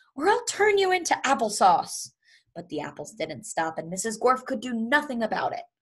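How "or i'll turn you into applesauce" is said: shrill, very high, threatening yell. Knocked to the floor by leaping apples, a woman shouts at them. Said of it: "she shouted".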